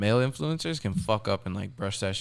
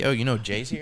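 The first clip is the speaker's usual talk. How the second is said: ordinary talk, nothing marked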